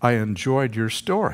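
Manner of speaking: put-on, very stern, severe, sternest possible delivery. Retelling what a woman said to them after the others left, in a stern voice. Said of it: "she said in the sternest possible voice".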